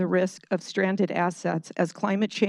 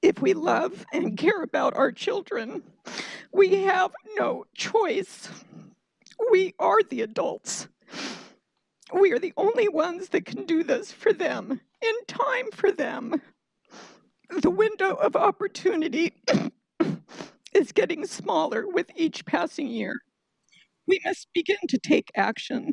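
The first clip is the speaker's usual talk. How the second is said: high, tearful emotional voice, near tears. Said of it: "Sorry, I'm very emotional".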